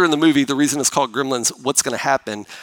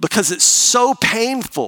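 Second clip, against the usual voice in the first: plain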